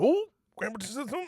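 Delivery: put-on high, fast, startled child voice.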